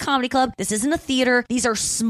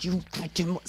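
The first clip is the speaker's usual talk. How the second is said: put-on angry muttering, lower and quieter; 4 semitones lower, 9 dB quieter than usual. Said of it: "he's just like".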